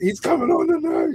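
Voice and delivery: very high, silly, squeaky puppet voice. Retelling a remark heard after dozing off at the kitchen table, in a Muppet voice. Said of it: "Did you say that like a Muppet?".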